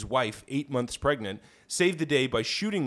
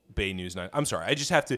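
normal talking voice

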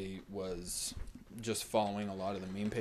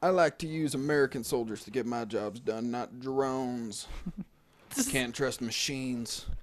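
put-on Texan voice, higher and louder; 4 semitones higher, 6 dB louder than usual. Answering a rival in a superhero showdown bit: George W. Bush impression. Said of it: "This is G W".

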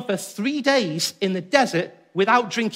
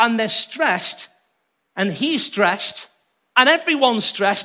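normal talking voice

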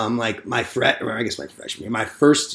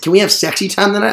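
put-on high, childish little-kid baby talk voice; 9 semitones higher, 7 dB louder than usual. Quoting a woman he used to hook up with, mock childish voice. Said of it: "you're not 8".

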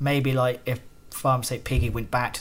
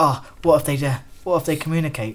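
mock panic, higher, louder, much slower; 3 semitones higher, 6 dB louder than usual. Recalling a trip to the shop with Jake, imitating Jake panicking. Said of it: "he was like panicky".

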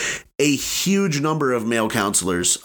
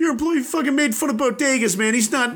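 put-on high-pitched Boston accent. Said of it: "I'm saying this in a Boston accent".

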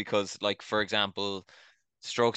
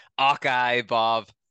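put-on belted out loud in a Northern Irish accent; 3 semitones higher, 8 dB louder than usual. Retelling what a commentator said in the booth: imitating Ewan Murray, Northern Irish-sounding accent. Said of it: "which probably sounds like a Northern accent, Ireland accent".

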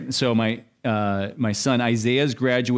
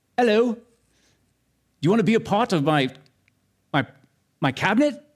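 put-on British accent, pitched up higher; 9 semitones higher than usual. Act out an imagined phone call from King Charles, in a King Charles British accent. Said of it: "some British accent".

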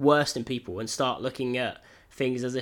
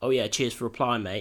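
mock sarcastic tone. Imitating people who message someone who ignored them: imitating a sarcastic message. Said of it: "something sarcastic".

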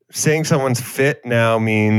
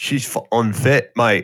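put-on, mock Cockney accent voice. Co-hosts joke about a woman; the speaker answers in a put-on Cockney accent.

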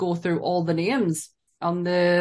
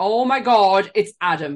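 very slow, loud, drawn-out exclamation; 5 dB louder than usual. Recalling blurting out during Guardians of the Galaxy Volume 2: retelling a loud exclamation. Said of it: "Like really loud".

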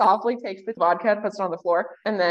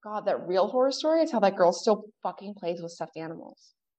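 stage whisper, hushed, half-whispered under the breath; 4 dB quieter than usual. Voicing campers who gossip about a girl: half-whispering in character. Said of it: "you hear April and Riley whisper".

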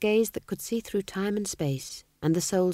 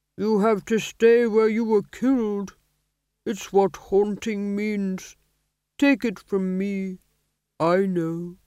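sorrowful, aged-sounding voice; 4 dB louder than usual. A voice from behind speaks to a man who cannot leave, sad old voice. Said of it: "said a sad old voice behind him".

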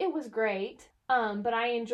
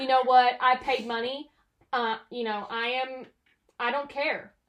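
usual speaking voice

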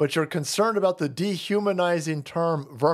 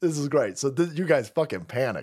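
usual speaking voice

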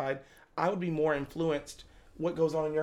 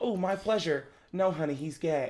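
imitated lisp. Imitating a Chick-fil-A type character: put-on lisp. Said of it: "we hear the lisp".

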